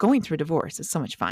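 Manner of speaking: ordinary talk, nothing marked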